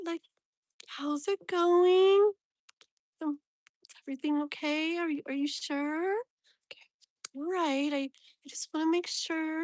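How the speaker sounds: high, sugary, sweet, fussing caring voice. Describing how a protective family member talks to her, the speaker imitates her sweet voice. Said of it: "so sweet".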